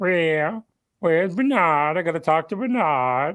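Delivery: high, slow, mocking voice. Retelling what a man who disliked him said in the hallway, mocking his voice. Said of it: "you can just go in and out of that".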